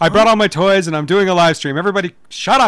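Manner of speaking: put-on, mock loud man's voice. Describing a man live-streaming in a Starbucks; imitating him talking loudly. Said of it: "just talking very loudly".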